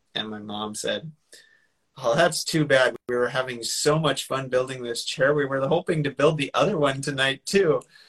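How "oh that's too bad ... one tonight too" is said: loud, heavy sarcasm, absolutely sarcastic. Retelling mom's reaction to a bedtime timer, imitating mom's heavy sarcasm. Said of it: "Absolutely sarcastically".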